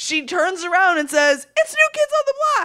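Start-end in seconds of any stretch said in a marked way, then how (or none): 1.6-2.6 excited, screaming fan voice. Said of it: "she was screaming in just a high enough pitch".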